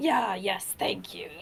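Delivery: devil character voice. Staying in character, a player thanks someone in a greater devil voice. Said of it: "I'm still using my greater devil's voice".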